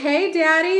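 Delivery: cheeky, playful, loud, high-pitched yell. Retelling how a woman on TikTok catcalls guys: imitating a playful catcall. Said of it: "yells out".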